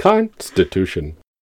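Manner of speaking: computer-like robot voice. Demonstrating a clip to insert during editing; robotic voice. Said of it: "Nice robotic voice".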